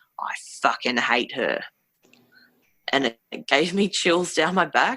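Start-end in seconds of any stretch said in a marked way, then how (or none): 0.2-1.6 low, hateful, malicious, menacing male voice. Describing an EVP recording they heard, the speaker imitates a male voice. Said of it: "you hear this male voice saying".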